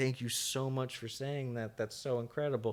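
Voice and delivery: acted crying, speaking through tears. Retelling what a woman in a video said to thank someone, imitating someone crying. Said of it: "She starts crying".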